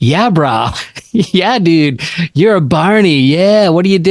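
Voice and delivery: slow surfer-dude drawl. Describing a character from the movie North Shore, Turtle's stereotypical surfer voice. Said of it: "it's so like stereotypical surfer".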